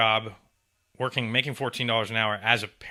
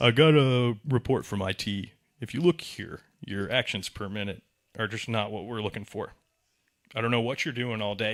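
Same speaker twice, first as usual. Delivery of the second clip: put-on smug, condescending voice. Imitating a former manager scolding about low clicks: imitating the smug manager, demeaning. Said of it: "just get real demeaning".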